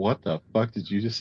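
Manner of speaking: plain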